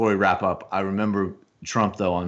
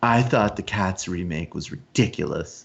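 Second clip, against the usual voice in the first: very breathy mocking man's voice. Mocking the guy held up as a symbol of virility, in a very breathy mocking voice. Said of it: "You just need to speak in a very breathy way".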